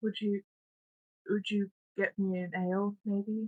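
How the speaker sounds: really small, tiny, upset voice. Game narrator voicing a girl character's request to the group; really small voice. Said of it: "requests with a with a really small voice".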